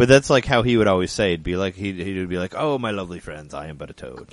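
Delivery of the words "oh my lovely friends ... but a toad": soft, put-on Shakespearean-style stage accent. Quoting how a homeless man always used to talk: imitating a Shakespearean accent. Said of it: "talked like in Shakespearean accent".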